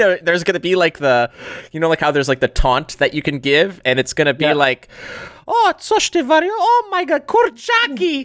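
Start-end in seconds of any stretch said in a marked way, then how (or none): 5.5-8.3 put-on slow, high old woman voice. Describing a taunt line for a game, Babcia Marysia voice. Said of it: "all these Polish babcia Marysia lines".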